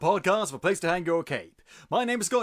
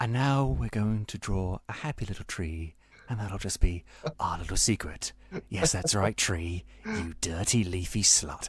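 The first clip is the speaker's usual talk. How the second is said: ASMR-style host voice; 8 semitones lower than usual. Joking after a Bob Ross comparison: Bob Ross voice. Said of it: "That's the Bob, Bob Ross twenty nineteen".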